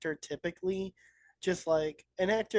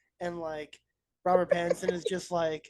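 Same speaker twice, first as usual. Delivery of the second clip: ordinary delivery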